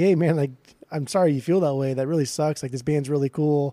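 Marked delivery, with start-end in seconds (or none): none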